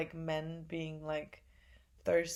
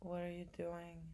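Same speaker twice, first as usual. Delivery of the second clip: put-on whisper, quieter; 11 dB quieter than usual. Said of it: "kind of whispering to me".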